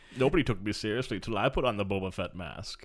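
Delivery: deep, dropped put-on character voice. Joking about a character putting on a mask: Bane voice.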